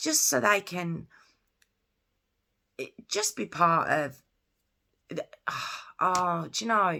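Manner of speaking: halting, stuttering, stumbling delivery. Speaker explaining what special schools offer children, stuttering and halting. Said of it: "I'm so sorry for stuttering".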